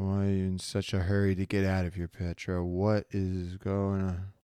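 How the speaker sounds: dry, level mumble through parched lips. Nakora questions the woman urging him to get out, mumbling with parched, dry lips. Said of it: "with parched, dry lips, Nakora just mumbles".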